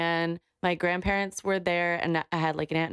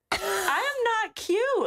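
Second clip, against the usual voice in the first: put-on indignant, very high, slow, dragged-out angry tone. Retelling a childhood memory of being called cute: imitating being pissed off. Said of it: "I was pissed".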